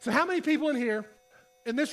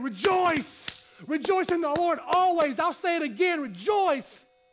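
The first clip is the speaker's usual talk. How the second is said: mock passionate preacher, fired up, high, drawn out; 5 semitones higher than usual. Showing how Paul said the verse: imitating Paul fired up. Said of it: "'Cause he's fired up about it".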